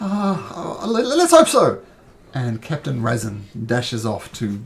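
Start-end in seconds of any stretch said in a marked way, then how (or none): 0.0-1.8 high, nervous, panicked stammer, tripping over words. Voicing a guard throwing medical supplies to a wounded man: panicked, stammering. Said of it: "is looking quite panicked".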